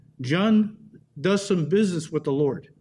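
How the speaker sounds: ordinary delivery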